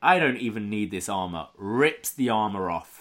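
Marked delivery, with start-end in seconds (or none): none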